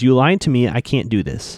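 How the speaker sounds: ordinary talk, nothing marked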